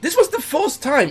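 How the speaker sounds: voice breaking, cracking up high.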